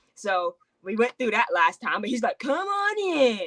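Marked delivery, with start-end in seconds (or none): 2.4-3.5 awkward, slightly pitched-up delivery. Imitating Jeff welcoming people in: awkward Jeff impression. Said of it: "being all awkward".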